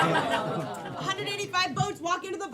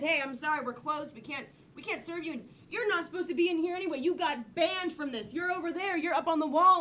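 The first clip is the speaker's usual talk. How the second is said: usual speaking voice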